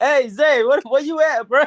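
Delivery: very high, loud holler. Retelling Mikey looking for Zay: imitating Mikey. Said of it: "Mikey was like".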